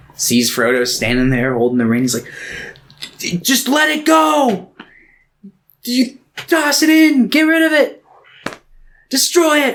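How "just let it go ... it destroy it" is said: high, slow, desperate shout.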